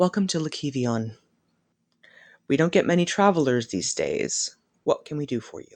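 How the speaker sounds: soft, quiet, gently mournful voice. The game master voicing an elf who greets the party; quiet, somewhat sorrowful voice. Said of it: "somewhat sorrowful voice".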